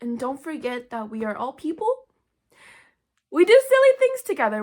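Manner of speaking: teary voice, catching on held-back tears. Closing message to the audience, the speaker is tearing up a little. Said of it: "I'm like tearing up a little".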